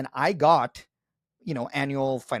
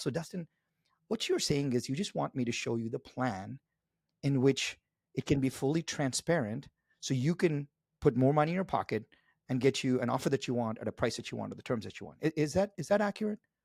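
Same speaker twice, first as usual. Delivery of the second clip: soft-spoken, quiet, de-escalating voice; 6 dB quieter than usual. Demonstrating how he de-escalates and reframes with a client: soft, slow voice. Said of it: "with the soft, slow voice".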